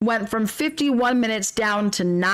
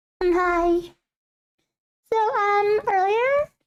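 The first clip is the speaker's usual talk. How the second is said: tiny, very high, cute kitty voice; 11 semitones higher than usual. Speaker voicing the cat, about to own up to what it did, in a cat voice. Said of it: "Should I do my cat voice?".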